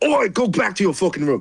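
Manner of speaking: big dwarf voice, high, angry shout. Voicing a big dwarf ordering a kobold away: dwarf yelling. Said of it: "the big dwarf guy just yells".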